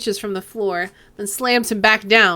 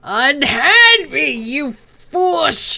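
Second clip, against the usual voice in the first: put-on very slow, high, drawn-out drunken troll bellow; 5 semitones higher, 4 dB louder than usual. Narrator voices a troll held by guards, in a drunken troll roar. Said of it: "The troll's voice comes out in an inebriated roar".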